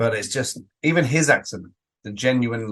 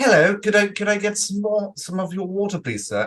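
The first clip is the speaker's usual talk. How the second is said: very high, exaggerated, over-the-top posh accent; 11 semitones higher than usual. Trying out a very posh character who sometimes says ain't: exaggerated posh accent. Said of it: "says things in a very posh accent".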